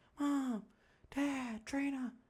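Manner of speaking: put-on high scream. Recalling being unable to move or breathe, calling to the parents: retelling screaming out names. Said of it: "I'm just screaming out their names".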